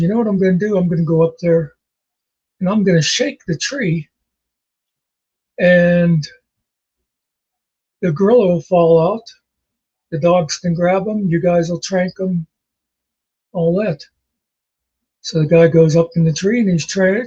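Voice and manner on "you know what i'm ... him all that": ordinary talk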